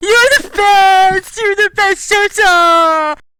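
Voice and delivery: acted sobbing. Voicing Tyler being dragged away: acted sobbing. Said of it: "who's still audibly sobbing, crying".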